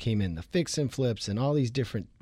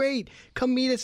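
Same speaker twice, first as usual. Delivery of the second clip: mock-excited, acted, much higher pitched voice; 12 semitones higher than usual. Speaker retells their own reply to a man on the other end, retelling excited reply. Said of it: "And I'm all, excited".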